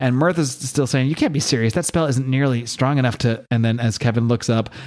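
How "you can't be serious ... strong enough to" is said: ordinary talk, nothing marked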